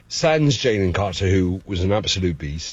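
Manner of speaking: put-on English accent, slowing down in places. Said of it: "the English accent was fantastic".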